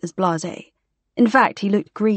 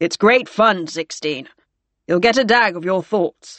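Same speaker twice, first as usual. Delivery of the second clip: plain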